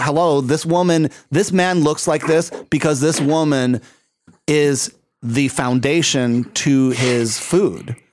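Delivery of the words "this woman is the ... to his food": ordinary talk, nothing marked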